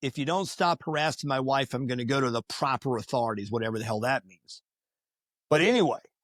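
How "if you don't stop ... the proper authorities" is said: usual speaking voice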